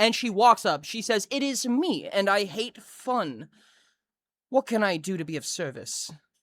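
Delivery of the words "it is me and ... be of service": showy, flamboyant, prissy strutting voice. Voicing a character strutting up with hands on hips: flamboyant prissy voice. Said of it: "struts up in a very flamboyant fashion".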